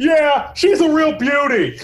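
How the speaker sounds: yelling, very high, slow and drawn out. Doing him as the animal control guy on Parks and Rec: yelling Andy Samberg impression. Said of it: "He can't stop yelling".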